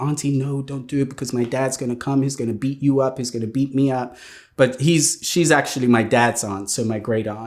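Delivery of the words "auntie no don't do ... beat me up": mock frightened, scared, pleading, begging tone. Retelling begging an aunt not to call a violent father: imitating scared pleading. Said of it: "I was scared".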